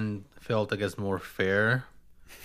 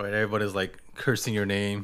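ordinary talk

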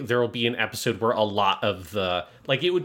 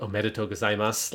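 put-on calm character voice, lower; 2 semitones lower, 4 dB quieter than usual. Speaker quoting a character's line from a scene, imitating Mami Konota's terrifying calm. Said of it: "terrifyingly calm voice".

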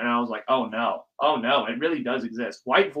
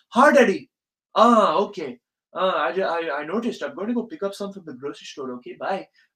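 put-on Indian accent, pitched up, slipping in; 5 semitones higher than usual. Acting out a phone call with a dad: put-on Indian accent. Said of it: "your voice just switches to, like, an Indian accent".

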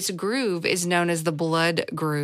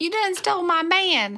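put-on saloon-lady voice; 12 semitones higher than usual. Telling a story, voicing a character who felt slighted: Blazing Fury saloon-lady voice. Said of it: "You sounded like the one of the ladies in the Blazing Fury at Dollywood".

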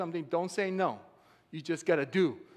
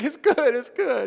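mock high, loud sobbing, words blubbered through tears; 7 semitones higher, 8 dB louder than usual. Retelling a man's answer mid-workout when asked if it's good, imitating him crying. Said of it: "He's like crying".

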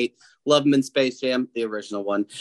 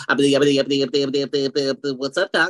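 put-on stuttering cartoon pig voice; 2 semitones higher than usual. Announcing a number three pick, the closing logo: Porky Pig voice. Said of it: "Mister Porky Pig".

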